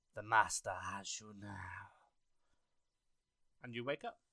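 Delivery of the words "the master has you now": deep, eerie, unnatural possessed voice. Narrator voicing two figures speaking in unison: a voice not their own. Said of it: "speak in unison with a voice that is not their own".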